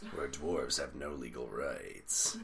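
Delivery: deep movie trailer announcer voiceover. Showing how he used it for a movie preview bit, movie preview announcer voice. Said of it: "the guy who does movie previews".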